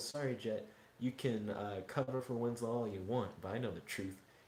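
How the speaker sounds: ordinary delivery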